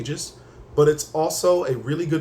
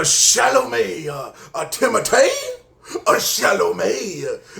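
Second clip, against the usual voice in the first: very slow, high, swooping sing-song voice, stretched words; 6 semitones higher, 4 dB louder than usual. Show how a name sounds like something said back on SNL, Adam Sandler on SNL voice. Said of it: "sounds like something Adam Sandler would have just said back on like S N L".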